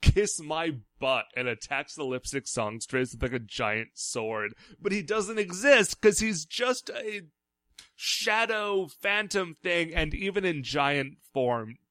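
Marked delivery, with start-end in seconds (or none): 0.0-1.3 light, mild, half-hearted shout. Retelling a cartoon fight scene, imitating Shadam shouting. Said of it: "He just shouts".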